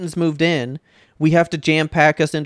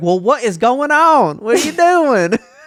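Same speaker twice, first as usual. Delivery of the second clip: heavy put-on country accent, loud and high; 8 semitones higher, 5 dB louder than usual. Describing a woman she talks to on the phone, imitating thick country accent. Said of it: "has the thickest country a- accent".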